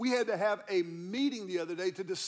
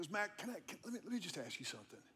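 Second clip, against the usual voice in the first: put-on wistful tone, quieter, faster; 12 dB quieter than usual. Retelling the question a man asked the speaker, imitating a wistful tone. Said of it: "this wistful tone in his voice".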